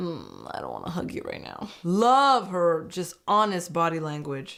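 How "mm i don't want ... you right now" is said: very low, soft, reluctant mock grumble. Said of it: "She's like".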